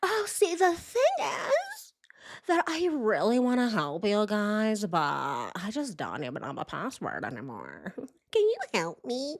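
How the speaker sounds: put-on sing-song girlish voice, pleading, helpless-sounding. Mocking how she asks men for help with her phone, in her weird girly voice. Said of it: "She always does that weird girly voice".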